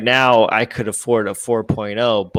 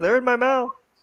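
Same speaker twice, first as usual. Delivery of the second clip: voice pushed way up high. Quoting a film line after the others discuss Cage: imitating Nicolas Cage. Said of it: "He doesn't say something like that".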